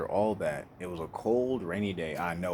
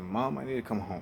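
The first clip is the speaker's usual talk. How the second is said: mock tearful sobbing, faster. Telling a crowd how you once begged your mother on the phone to let you come home, putting on crying. imitating someone crying.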